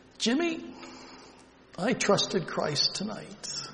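weak, slow, slightly high, feeble voice with little push. Retelling a grandfather's words on a phone call: imitating a weak voice. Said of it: "and his weak voice".

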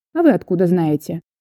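ordinary delivery

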